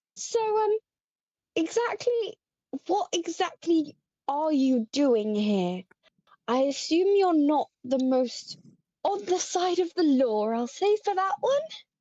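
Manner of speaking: orc voice, surprisingly high in pitch. Voicing an orc character questioning a stranger: quite high voice for an orc. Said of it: "a quite high voice for an orc".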